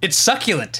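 way too much enthusiasm. Recapping a scene where Peter describes a dish, imitating Peter's way-too-energetic delivery. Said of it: "goes way too energetically".

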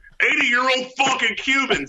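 mock-yelling at top of lungs. Retelling answering his wife's question from his office, retelling a full-lung shout. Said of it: "at the top of my lungs".

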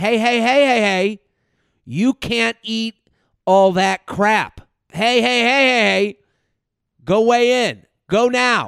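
slow, nagging, pestering tone. Imitating an annoying friend nagging about health: annoying nagging friend voice. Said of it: "it's your annoying little friend that's like".

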